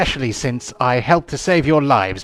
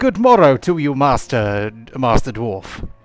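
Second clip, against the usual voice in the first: put-on crisp Received Pronunciation English accent. Voicing an orc sharpshooter character, in a crisp RP accent. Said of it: "I think he might have a crisp R P accent".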